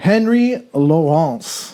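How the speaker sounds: fake, put-on French accent. Saying the other speaker's name: put-on French accent. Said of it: "I'm using the French accent for you".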